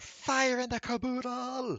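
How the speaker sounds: shrill, loud, very high yell. Voicing a cry heard from behind the group: loud shout. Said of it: "Just a loud shout of".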